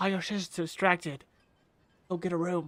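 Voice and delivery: close, secretive, hushed stage half-whisper. A player in a dice game half-whispers into the middle sister's ear; half-whispering. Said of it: "I'm gonna whisper into the middle sister's ear".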